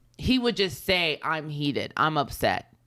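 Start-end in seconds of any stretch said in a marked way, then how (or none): none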